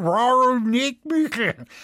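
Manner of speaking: speaking through a full mouth. Narrator reads a man answering his brother-in-law, talking with his mouth full. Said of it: "fragte Moosbichler mit vollem Mund".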